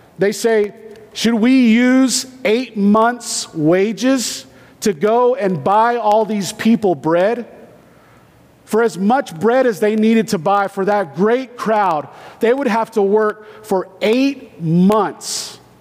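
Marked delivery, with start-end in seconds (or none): none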